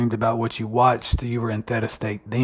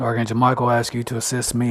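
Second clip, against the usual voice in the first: ordinary talk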